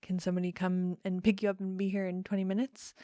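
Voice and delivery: ordinary delivery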